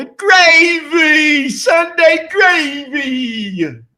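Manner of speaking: put-on, very slow New Jersey drawl, "gravy" stretched. Asked about a word, answering in a new jersey accent. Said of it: "Why did you sound like fucking uh, John Travolta".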